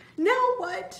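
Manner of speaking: very high, loud, whiny voice. Trapped behind a door that won't budge, whining to his friends. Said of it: "Michael whined".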